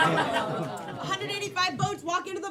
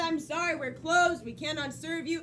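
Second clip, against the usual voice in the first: ordinary talk, nothing marked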